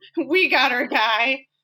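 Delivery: weedy, thin, little reedy voice. Telling a story, quoting a policeman who thinks he found his man, in a little reedy voice. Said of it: "in his little reedy voice".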